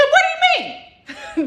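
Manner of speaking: shrill, very high, shrieking voice. Retelling a family story, the speaker quotes mom, imitating her high shrieking voice. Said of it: "This is really how my mom talks".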